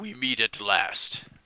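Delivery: villain voice of an ancient undead dragon. Voicing an ancient undead dragon greeting the party: voicing an undead dragon. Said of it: "the dragon says".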